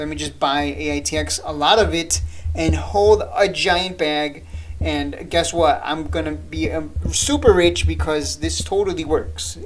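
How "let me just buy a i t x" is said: ordinary delivery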